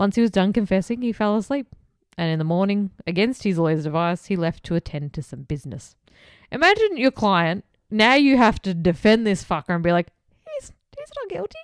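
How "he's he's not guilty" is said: very high, very quiet, squeaky mouse voice. Playing a lawyer defending a guilty client, in a squeaky pathetic mouse voice. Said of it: "that squeaky little fucking pathetic mouse voice you just did".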